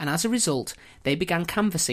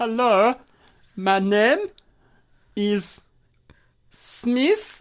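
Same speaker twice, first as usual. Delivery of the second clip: put-on, very slow, loud, bad German accent; 7 semitones higher, 5 dB louder than usual. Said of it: "with a pronounced German accent".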